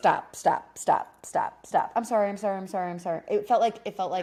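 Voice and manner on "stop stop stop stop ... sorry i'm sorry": mock frantic, panicked, pleading little-kid voice. Retelling how he reacted to her crying: imitating a panicked childlike apology. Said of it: "like a little kid".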